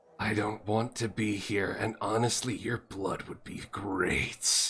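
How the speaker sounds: quiet speech through clenched, gritted teeth. A spectral character gets real close to him and speaks through gritted teeth. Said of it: "just says to him with gritted teeth".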